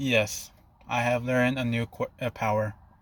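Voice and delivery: ordinary delivery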